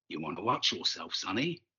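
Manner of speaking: quiet, gentle, soft, low voice. A man squares up against a hot-headed young man before combat, softly. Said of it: "He said the words softly".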